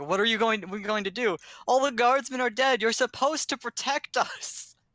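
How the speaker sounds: high-pitched yelling. Narrating the scene, the speaker voices nobles shouting from the other side. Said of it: "you do hear shouting from the other side".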